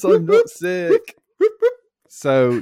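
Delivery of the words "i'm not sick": very high, slow, loud gleeful squeal.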